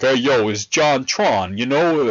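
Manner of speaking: very slow, laid-on fake New York accent. Imitating how he talks in his videos, in JonTron's fake New York accent. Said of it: "He started doing a fake New York accent".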